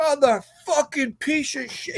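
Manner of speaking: mock screamed cursing. Retelling a performer trapped under a fallen curtain: imitating someone screaming curses. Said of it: "He's screaming and cursing".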